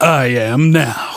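put-on swaggering toughness. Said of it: "he said it like he just cocked a shotgun".

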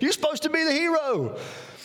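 put-on high, pleading little-boy voice.

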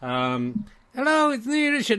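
high-pitched, very slow, drawn-out puppet voice. The speaker gives a toy its own greeting, in a Richard puppet voice. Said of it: "That is just me doing the voice of that one".

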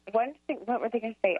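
usual speaking voice

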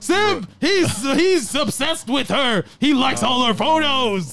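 animated announcer-style narration voice-over. Acting out people calling a guy a simp, in a Dragon Ball Z narrator voice. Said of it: "You sound like the commentator for Dragon Ball Z".

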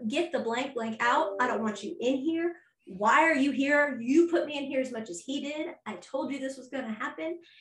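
put-on heated screaming rant, kept in check. Retelling yelling at two superiors who walked into the hospital room, retelling screaming and yelling. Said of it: "I screamed and yelled at them".

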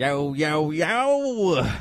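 long, drawn-out, stretched yo yo yo. Greeting the co-host with a Joe Exotic speaking voice. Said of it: "was that your Speaking Joe Exotic voice?".

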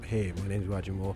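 put-on deep voice, dropped low and hushed. Showing off voices practiced all week, the speaker does a put-on deep voice. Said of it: "Shall I do my deep voice?".

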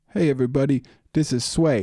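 put-on radio DJ delivery. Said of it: "I shouldn't do that voice".

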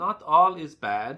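gentle, high, very slow and drawn-out. Narrator voicing her answer after the narrator explains the bent smile, said gently. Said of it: "she said gently".

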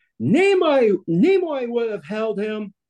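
high, jabbing shouted yell. Retelling calling back while walking away after a photo: retelling a yell. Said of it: "I turn my head and I yell".

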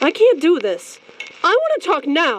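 pushed up high with swinging pitch. At dinner, refusing to wait any longer to talk to the other character, yelling. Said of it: "You know I won't talk to you when you're yelling".

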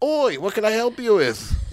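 loud, put-on Australian accent, leaning on oi. Acting out a man kept in the back room offering help, in a put-on Australian accent. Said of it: "That would be my Australian accent".

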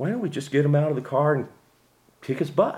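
mock unbothered, easygoing, calm, slightly high tone. Retelling two men screaming at each other, then quoting a third man: imitating a calm guy.

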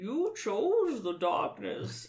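slow, deliberate comic-book villain voice. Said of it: "and I said".

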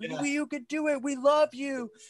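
mock group yell in unison, very high. Recounting a moment on tour when everyone yelled together; retelling a group yell. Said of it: "we all were like yelling in unison".

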